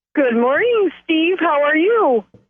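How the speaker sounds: a bit of glee in the voice. [name], welcomed back on the program, greets the host Steve, with a bit of glee. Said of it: "a bit of glee in your voice there".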